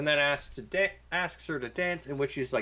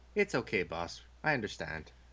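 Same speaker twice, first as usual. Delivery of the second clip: calm, steady, soothing, reassuring, lowered voice; 5 semitones lower, 4 dB quieter than usual. Retelling how Scotty answers Kirk after Kirk snaps and apologizes; imitating Scotty's calm reassurance. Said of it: "in the exact same tone of voice".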